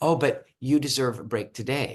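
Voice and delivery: plain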